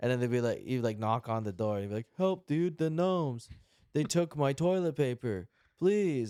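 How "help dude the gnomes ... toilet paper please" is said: deliberately bad, high-pitched hammy amateur acting. Imagining a player knocking on an outhouse door, in deliberately bad voice acting. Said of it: "so they'd all suck at the voice acting".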